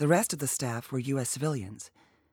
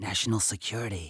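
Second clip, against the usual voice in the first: whisper, much lower; 5 semitones lower, 3 dB quieter than usual. A man whispers back to a woman pressing him about a heavy flight case, whispered. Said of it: "Saul whispered back".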